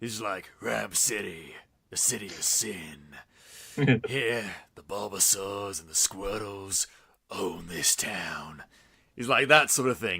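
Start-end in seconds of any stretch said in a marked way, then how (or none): 0.6-8.6 low, gruff, hushed noir narration style. Describing the game's Pikachu, the speaker acts out his line in a deep gruff noir voice. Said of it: "much deeper, gruffer, bassier, hardboiled noir voice".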